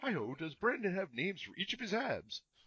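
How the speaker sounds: little frog puppet voice, high and soft. Asked to read the next question as Kermit, speaker does a Kermit voice. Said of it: "a good Kermit voice?".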